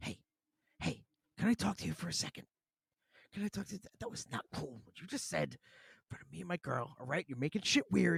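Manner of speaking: acted, confrontational whisper through gritted teeth. Acting out a movie character confronting another guy, in a mock whisper through clenched teeth. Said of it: "a whispering through clenched teeth kind of conversation".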